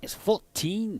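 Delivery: Manx-accented voice. Showing another giveaway word in how someone talks, say it in a put-on Manx accent. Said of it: "the other giveaway is".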